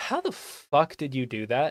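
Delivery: bright, relentlessly cheery voice with swooping pitch. Retelling what a man says without needing to shout, in a very cheery voice. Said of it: "he says in a very cheery voice".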